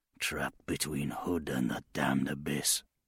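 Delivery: very low, very quiet muttering. A man glancing back at the inner keep mutters into the wind. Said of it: "He muttered into the wind".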